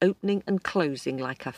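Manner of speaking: plain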